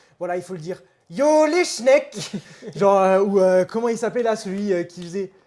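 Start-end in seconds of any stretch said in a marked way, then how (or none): 1.1-2.3 put-on Alsatian-accented speech. Complaining about Alsatian influencers, the speaker mimics them in an exaggerated Alsatian accent. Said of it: "qui abusent sur l'accent alsacien".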